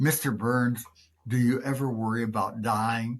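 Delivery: normal talking voice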